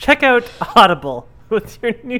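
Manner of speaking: mock advertisement read in announcer voice.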